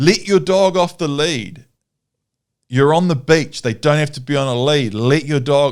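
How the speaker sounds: irate, heated, angry scolding. Retelling how a man at the beach yelled about the lead: imitating an angry man yelling. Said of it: "the guy's yelling at me".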